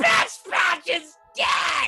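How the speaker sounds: put-on warrior shout. Voicing a character calling from outside the vault: Gunthar's voice. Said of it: "And he's like".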